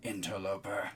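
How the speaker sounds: very deep, very quiet, deadly tone. A game master voices an unseen speaker behind the player, in a low, deadly tone. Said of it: "says in a low, deadly tone".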